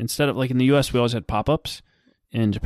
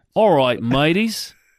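put-on Australian accent, high and loud; 5 semitones higher, 5 dB louder than usual. Joining a bit of doing Australian accents, in a put-on Australian accent. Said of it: "I only know like three words in Australian".

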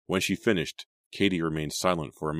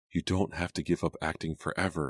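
ordinary delivery, nothing marked

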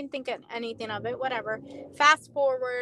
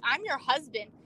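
put-on upset male voice. Retelling what an arrested man said to her: imitating someone getting upset. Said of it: "he's getting upset".

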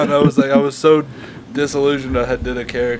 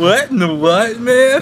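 put-on surfer dude voice, pitched up; 9 semitones higher, 4 dB louder than usual. Introducing the speaker's own new character, Surfer Bill voice. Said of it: "That's my own new character. Surfer Bill".

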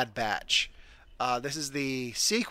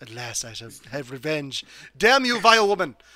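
put-on cartoon baby villain voice, louder; 5 dB louder than usual. Imagining the hooded baby as Stewie Griffin: Stewie Griffin voice. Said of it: "just be Stewie Griffin".

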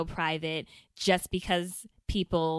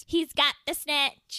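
very high fake British-Australian mix, bad London accent; 9 semitones higher, 4 dB louder than usual. Doing an accent during a game while a friend questions it; bad London accent. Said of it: "like London?".

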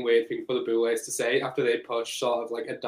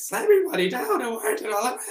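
bad attempt at a witch voice, very high; 12 semitones higher than usual. Speaker tries out a voice while chatting with others, attempted witch voice. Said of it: "I wish I could do a witch voice so I could be like".

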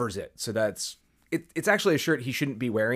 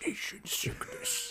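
high, whispered, modulated helmet-like voice. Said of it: "that great modulated voice coming from her helmet".

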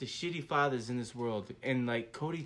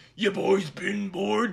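slow, rough roaring voice; 5 semitones higher, 6 dB louder than usual. Showing an old Cody imitation done like the Ultimate Warrior: Ultimate Warrior voice. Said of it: "I tried to make him sound like the Ultimate Warrior".

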